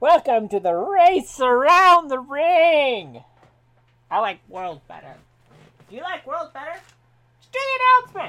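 very loud arena race announcer voice. An announcer character introducing the race to the audience, in a race announcer voice. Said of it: "you hear the sounds of the announcer saying".

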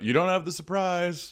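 very high-pitched shouted call-out. As the hunters slow and gather, the speaker yells out to them. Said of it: "And I just yell out".

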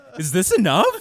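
play-acted panic, very high, very loud, shrill. Retelling how a server asked about the cheese: imitating panicked voice. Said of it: "panic is in her voice".

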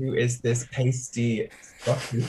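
usual speaking voice

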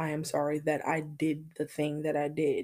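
normal talking voice

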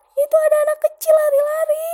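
put-on child's voice, high, loud, fast panicked crying.

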